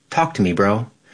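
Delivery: ordinary delivery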